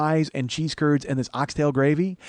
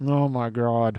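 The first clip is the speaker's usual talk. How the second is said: pleased exclamation spoken out the side of the mouth; 4 semitones lower than usual. Retelling how Karen reacts to food she likes: imitating Karen, mouth sideways. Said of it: "she'll open her mouth sideways, like she don't like Jimmy Cagney".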